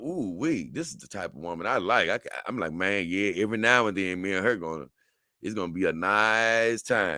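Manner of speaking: plain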